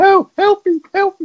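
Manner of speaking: put-on very high little boy voice, crying out. Retelling a film scene, voicing a boy calling from a sewer: young boy's voice. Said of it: "With a boy's voice going".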